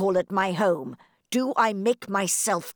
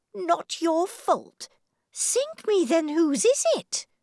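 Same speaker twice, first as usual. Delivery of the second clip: very high, crying-out exclamation; 9 semitones higher than usual. A narrator reads a baronet's retort to a desperate man: exclaiming. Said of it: "Sir Percy cried".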